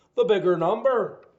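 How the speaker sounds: loud put-on Irish accent. Explaining a step of solving the equation, in an Irish accent. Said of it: "say it in Irish accent".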